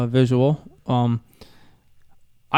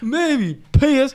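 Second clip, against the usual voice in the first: high, silly put-on voice. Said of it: "What was that voice?".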